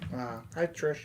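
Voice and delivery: very soft, very quiet, disappointed, let-down tone. Greeting trish after hearing her name as the bidder, disappointed. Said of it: "Why did you sound disappointed?".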